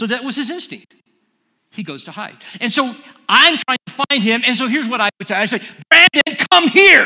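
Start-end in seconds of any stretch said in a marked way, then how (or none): 5.9-7.1 threatening, angry, very loud raised shout. Showing how a parent calls a child in trouble: angry, loud call. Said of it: "just that tone and the volume tells him".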